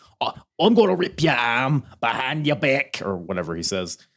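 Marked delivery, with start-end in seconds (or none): 0.2-3.0 put-on light hint of Australian accent, pitched higher. Act out what he tells his opponent he will do, in a Zac Gibson accent, a little Australian. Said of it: "accent that you just did, you know, that sounded like Zac Gibson".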